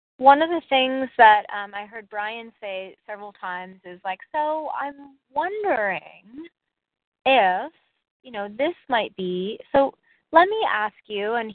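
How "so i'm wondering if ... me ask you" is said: mock easy, gentle, inquisitive wondering tone. Imitating how a colleague gently questions a client: imitating a soft, curious tone. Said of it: "he just says it in such a soft way".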